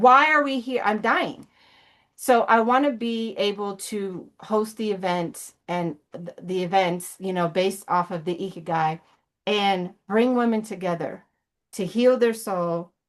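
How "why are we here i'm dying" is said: anguished, desperate screaming outcry. Recalling sitting in church, the speaker quotes a woman: imitating her scream. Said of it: "she's screaming".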